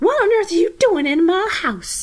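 high-pitched, shrill outcry in a fancy lady voice. Narrator reads a lady's line as she cries out. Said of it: "she cries out".

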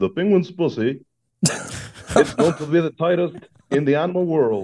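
low, deep voice-over announcer narrator tone. Telling a joke about a penguin documentary, doing a deep-voiced narrator impression. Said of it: "a deep voice guy goes like".

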